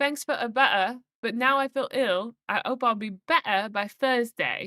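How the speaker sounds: attempted British accent. Speaker announcing they're becoming British, then trying a British accent. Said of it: "I'm becoming British".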